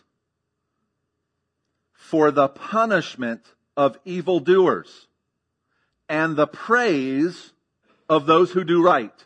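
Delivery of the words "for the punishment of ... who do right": very slow, weighty, drawn-out emphasis on every word. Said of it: "Notice this".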